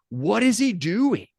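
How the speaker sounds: very high, shrill, high-pitched scream. Retelling how a coach's dad stood up on national TV: imitating Jim Harbaugh's dad screaming. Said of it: "was standing up screaming".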